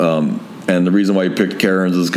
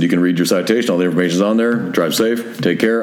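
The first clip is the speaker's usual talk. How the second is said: normal talking voice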